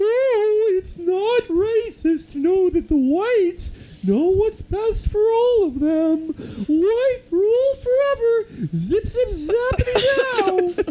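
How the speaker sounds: over-the-top, very high-pitched put-on cartoon voice. Recalling reading a letter aloud, in a cartoonish put-on voice. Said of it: "I just read it in that cartoonish voice going".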